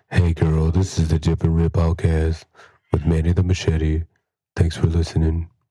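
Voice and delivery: mock seductive voice. Doing a podcast intro into the mic: put-on sexy voice. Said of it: "I'm trying to do sexy voice".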